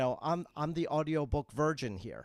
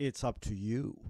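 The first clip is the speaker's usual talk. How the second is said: sly, crafty put-on voice; 3 semitones lower than usual. Telling readers a sequel depends on their response: put-on crafty voice. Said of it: "in my craftiest voice".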